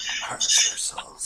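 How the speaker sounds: whispered under her breath. A player describes their character, then voices her line, whispering to herself. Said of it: "Lula's just whispering to herself".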